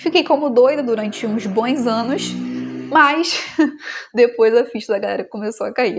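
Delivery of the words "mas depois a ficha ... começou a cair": speaking while laughing through the words. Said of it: "Eu tô rindo".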